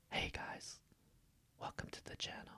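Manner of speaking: whispering. A channel host greets viewers: whispering. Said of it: "Do you guys know A S M R?".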